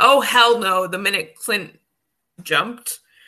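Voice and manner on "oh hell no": acted-out horrified, yelled, screamed outburst. Retelling a reaction the minute Clint jumped: imitating own screaming. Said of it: "I started screaming".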